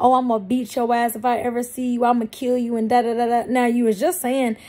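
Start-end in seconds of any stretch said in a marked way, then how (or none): 0.0-2.8 imitated angry voice. Retelling a threat someone made in a rage: imitating someone mad. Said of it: "he was all mad".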